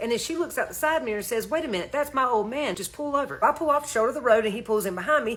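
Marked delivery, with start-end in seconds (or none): none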